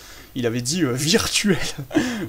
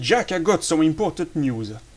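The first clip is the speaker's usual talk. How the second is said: put-on English accent. Explaining a game's story in French, voicing Major Zero speaking to Jack: Major Zero English accent. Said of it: "la voix, euh, l'accent anglais".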